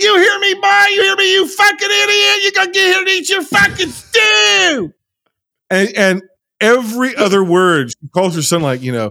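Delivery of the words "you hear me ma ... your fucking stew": very high, shrill tirade, stew stretched out. Retelling a movie scene: shrill Ethel impression. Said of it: "she's like".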